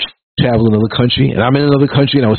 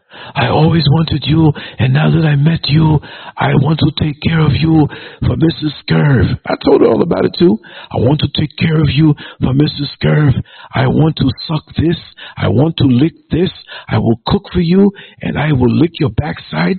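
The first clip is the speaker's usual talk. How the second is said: put-on deep, low-pitched woman's voice; 3 semitones higher than usual. Retelling what a woman told him she wanted, imitating a deep-voiced woman. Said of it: "she had a deep kind of voice".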